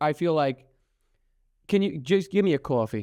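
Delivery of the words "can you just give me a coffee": New Yorker accent, everyday talk. Demonstrating how New Yorkers talk, in a New York accent. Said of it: "New Yorkers".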